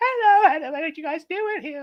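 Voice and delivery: put-on British accent. Pranking the other players by putting on Little John's voice. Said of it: "what's his name, Little John".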